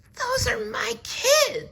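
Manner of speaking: rough, scratchy character voice. Reading a children's story aloud, voicing Miss Nelson in a scratchy voice. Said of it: "she said in a scratchy voice".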